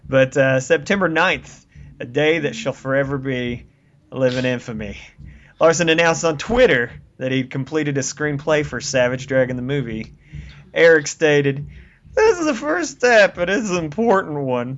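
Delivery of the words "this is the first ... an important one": put-on drunk voice, higher. Quoting Larson's announcement of a finished screenplay: drunk-sounding Larson impression. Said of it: "Is he, like, drunk when he stated that?".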